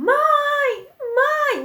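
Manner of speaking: mock frantic wailing cry, very high, drawn out, desperate. Retelling a prank call where the caller kept shouting: imitating a desperate shout. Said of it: "Gritando, desperada".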